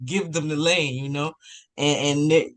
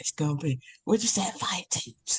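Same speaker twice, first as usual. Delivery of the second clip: soft, hushed pretend stage whisper; 7 dB quieter than usual. Joking about worrying over the team's record: pretend whisper. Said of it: "I'm gonna start whispering".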